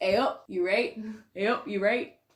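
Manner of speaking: broad-sounding put-on Yorkshire dialect accent. Asked for their yorkshire impression, the speaker shows it off: yorkshire accent impression. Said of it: "my Yorkshire impression?".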